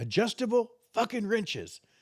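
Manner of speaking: put-on very high-pitched, furious, angry outburst. Retelling a story from work, imitating an angry supervisor. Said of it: "he's real colorful when he got pissed off".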